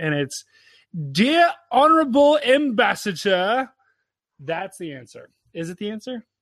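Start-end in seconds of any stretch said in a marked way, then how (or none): 1.1-3.7 put-on British accent, slower. Giving a listener the answer, the speaker says it in a British accent. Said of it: "you have to say it in a British accent".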